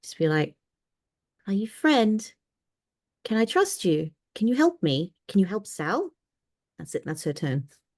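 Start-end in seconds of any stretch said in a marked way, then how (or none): 1.5-6.1 tiny, bewildered, confused fairy creature voice. A confused fairy under the tree talks down to you: very quiet tiny fairy voice. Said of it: "a very confused little tiny fairy voice very quietly talk down to you".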